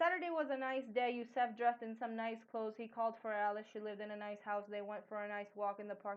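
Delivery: run-together reading straight through, no pauses. Reading a paragraph as if it had no punctuation, sentences run together, no pauses. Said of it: "like I would read it without any punctuation".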